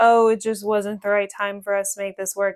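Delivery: ordinary delivery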